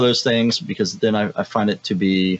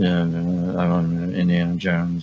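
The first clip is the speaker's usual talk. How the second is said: flat put-on voice, much slower; 3 semitones lower than usual. Mocking how Harrison Ford sounds in interviews, flat monotone Harrison Ford. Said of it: "I'm Mister Monotone".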